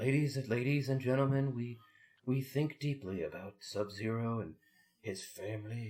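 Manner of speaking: gentle announcer impression. Discussing a movie scene, imitating the actor's softest announcer voice. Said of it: "the softest announcer voice he could muster".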